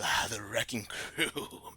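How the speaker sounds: rasping put-on character voice. A game master voices a weakened divine figure addressing the players, raspy voice. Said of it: "He's got this raspy voice".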